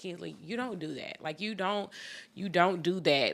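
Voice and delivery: play-acted, upset, scolding tone. Retelling scolding her kid over a rude reaction: retelling her upset scolding. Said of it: "I was so upset with her".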